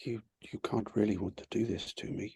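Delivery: very soft, gentle, barely audible murmur. She speaks to him while looking deep into his eyes, very soft voice. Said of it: "she just says in a very soft voice".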